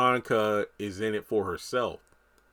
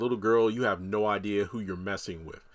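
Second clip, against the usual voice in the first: mock-condescending, put-on superior tone. Recounting a character's taunt at a little girl, retelling a condescending line. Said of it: "in a condescending tone".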